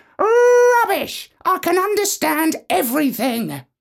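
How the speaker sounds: shrill, very high, screeching parrot voice. A narrator reads the parrot's retort to the professor: screeching parrot. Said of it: "the parrot screeched".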